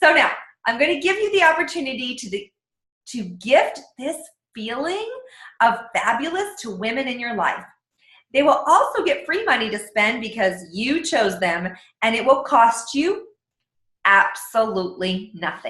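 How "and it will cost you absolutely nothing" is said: slow, weighted pause before absolutely nothing. A speaker pitching a gift offer, with a pause before the key phrase. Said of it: "Do you see how I paused at that?".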